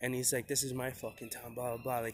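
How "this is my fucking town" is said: put-on freaked-out, angry outburst. Retelling an arrest, a cop swearing: imitating a cop freaking out. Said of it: "he's freaking out, like, swearing".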